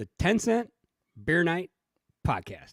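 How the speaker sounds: halting, staggered, each word spaced out with pauses. Showing an easier way to say a podcast name: small pauses between each word. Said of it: "If you stagger it out, it's easier to say. So it's, I like to say it like this".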